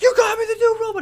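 put-on screamed way up high, girlish. Retelling a TV scene where Mac gets a robot: imitating Mac screaming high-pitched like a girl. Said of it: "He screams like a girl, like real, like, high pitched".

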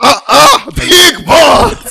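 high, loud, mock hype-man shout.

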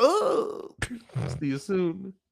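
gleeful high teasing. Asked to do it again, a speaker repeats the episode line, imitating He Who Remains, gleeful. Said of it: "Can you do that again?".

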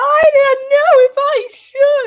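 very high, shrill, belted-out shouting. Comparing recordings of a musical, speaker imitates a performer shouting the line. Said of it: "she's just shouting the line".

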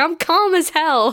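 play-acted, heated, high, mild yell. Recapping a scene where a character is told to calm down, acting out Kyo screaming back. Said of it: "Kyo just screams back".

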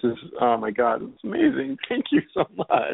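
tearful, swooping, gushing voice on the verge of tears. Thanking the host after warm words of friendship, close to tears. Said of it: "don't cry".

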